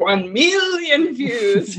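put-on, swooping cartoon character voice. Reading a view-count goal out loud, cartoon voice. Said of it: "I like to say it in a cartoon voice".

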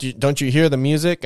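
ordinary delivery

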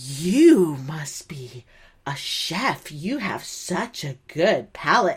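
mock fawning, slow, drawn-out gushing tone. Retelling a waitress praising diners eating in the dark: imitating a flattering waitress. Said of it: "talking like that, like, trying, I think, to really just, like, woo us".

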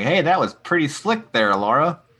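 odd cartoonish voice, pitched high. Podcaster retelling the episode where Squinch turns to Laura, weird Looney Tunes voice. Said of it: "he's doing a weird Looney Tunes voice".

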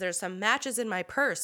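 ordinary talk

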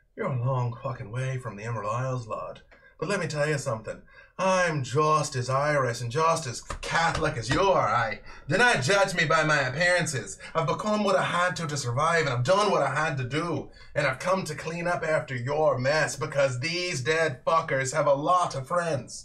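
put-on female character voice. A storyteller voices a woman with bright red eyes confronting the listener's character. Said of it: "her eyes turn bright red. And she's like".

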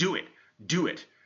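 high, drawn-out shouted yell, acted out. Retelling a quarterback's call to a teammate during the cadence: retelling a yell. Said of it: "he just yells".

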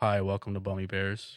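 very low, bottomed-out, put-on deep voice. Comparing voices with podcast co-hosts, showing off a deep voice. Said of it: "This is my deep voice".

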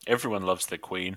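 wry, dry, sardonic mocking edge. A character answers questions about whether they knew their queen; sardonic. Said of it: "that was a sardonic sort of remark".

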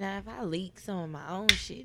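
normal talking voice

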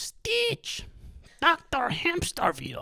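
very high, swooping, sing-song mad-scientist voice. Recalling the evil scientist from the movie: Doctor Hamsterville voice. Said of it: "that's how he talks".

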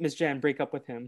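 ordinary talk

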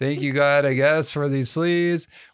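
reluctant, grudging, spoken through gritted teeth. Retelling how Corey and her sister Elizabeth responded, imitating thanks through gritted teeth. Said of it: "kind of gritted teeth".

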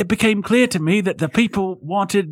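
clumsy put-on British accent. Reading aloud a quote from a 26-year-old Londoner, in a bad British accent. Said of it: "my accent game is terrible".

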